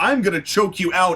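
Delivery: normal talking voice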